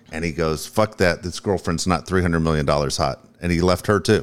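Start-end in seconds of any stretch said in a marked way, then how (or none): none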